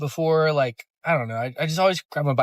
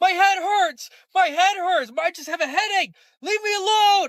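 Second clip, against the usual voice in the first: mock-angry scream, much higher pitched. Retelling what a woman screamed at the speaker after the bible came inside, imitating angry screaming. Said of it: "she starts screaming at me".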